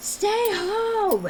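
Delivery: piercing, high-pitched yell.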